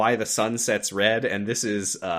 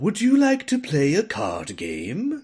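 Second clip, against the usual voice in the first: goofy, doofy, put-on British accent, high, swooping; 6 semitones higher than usual. Describing the gambler character, the speaker mimics his doofy British accent. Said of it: "he actually has a really doofy British accent".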